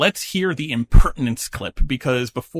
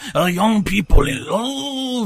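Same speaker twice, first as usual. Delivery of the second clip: put-on French accent, higher; 7 semitones higher than usual. Doing a playful put-on voice while commenting on the show, in a french accent. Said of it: "the wonderful French accent?".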